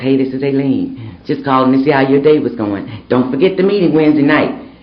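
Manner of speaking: soft, gentle-sounding voice. Acting out a woman's Sunday phone call, imitating Aileen's soft voice. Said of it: "she's got this real soft voice".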